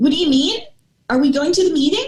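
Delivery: rising question lilt at end of mean and meeting. Speaker demonstrates the uptalk to avoid on camera, uptalk, everything like a question. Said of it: "With everything sounding like a question".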